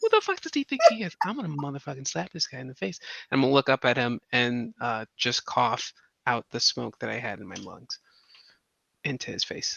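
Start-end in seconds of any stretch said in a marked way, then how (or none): 0.0-3.0 grumbling under breath, higher. Voicing a character who mutters after a breath hit: muttering under breath. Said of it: "underneath my breath, I go like".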